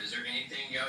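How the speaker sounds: ordinary delivery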